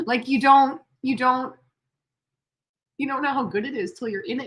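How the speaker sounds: slightly moved, heartfelt, a little emotional. Speaker tells a listener about looking back on their life, getting a little emotional. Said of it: "I'm like getting a little emotional".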